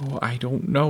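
in a whisper. Answering a frightened question about what is happening to ma, whispered. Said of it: "whispered Mary".

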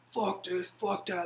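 mock furious tone. Recalling a team's loss, the speaker acts out a teammate, mock-angry. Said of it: "They're slam doors".

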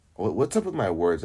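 ordinary delivery

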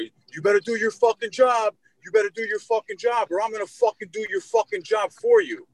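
put-on very high, rasping, swooping, escalating holler. Retelling how the angry man yelled again, even louder: imitating a man yelling louder. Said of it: "even louder".

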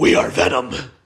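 deep, auto-tuned, effects-track-like voice. Retelling a trailer scene, the character answering the bad guy, Venom's deep auto-tune voice. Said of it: "in the deep auto-tune voice that they use".

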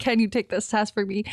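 plain

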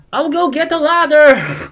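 high, drawn-out, carried-away shouting. Voicing Robin, who runs off to fetch a ladder: shouting in character. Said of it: "Don't shout".

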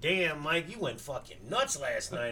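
ordinary delivery

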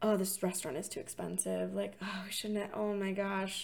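mock muttering under breath. Retelling a couple discussing a restaurant's cost: imitating muttering under breath. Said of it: "discussing under their breath".

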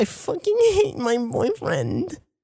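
put-on crying, very high, swooping, wailing sobs. Retelling a friend sitting down and crying: imitating someone crying. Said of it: "sits back down and starts crying".

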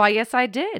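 sunny, cheerful tone. Retelling a girl's answer when the teacher questions her, imitating a cheerful reply. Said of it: "she like cheerfully goes".

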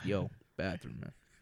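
deep, low voice. Retelling what someone who walked in asked for: imitating a deep voice. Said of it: "just like that with that deep voice".

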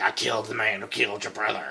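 wickedly delighted, gleefully evil tone. Retelling a scene where Morgan walks up to Henry: imitating Morgan, gleefully evil. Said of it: "gleefully evil, walks up to Henry and is like".

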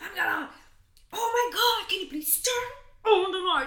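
acted furious high-pitched voice. Retelling a night-time request to turn on the light: imitating Manu's angry voice. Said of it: "you were having so angry voice".

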